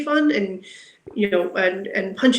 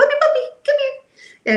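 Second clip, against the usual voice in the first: very high, cheery, happy calling voice. Showing how to call a puppy over, in a happy voice. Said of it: "And happy voice".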